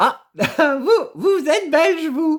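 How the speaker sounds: high, loud, surprised exclamation.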